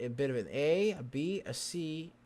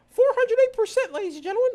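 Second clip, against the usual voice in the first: squeaked out, high-pitched and loud; 14 dB louder than usual. Joking with another speaker while enunciating; Mickey Mouse voice. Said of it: "so I sound like Mickey Mouse".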